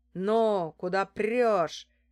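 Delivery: furious, angry shouted yell. A guard stops a woman caught in the closing gate, shouted angrily. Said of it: "выкрикнул гневно охранник".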